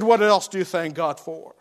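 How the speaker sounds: put-on sarcastic tone. Quoting a man's remark to a very poor porter, retelling a sarcastic question. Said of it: "Wesley sarcastically said to him".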